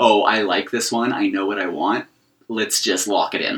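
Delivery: plain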